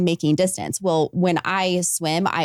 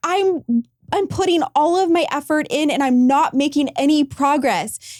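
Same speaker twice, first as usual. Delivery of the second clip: hysterical, frantic venting; 9 semitones higher than usual. Recounting struggling before a finish line, acting out being hysterical. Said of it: "I'm hysterical".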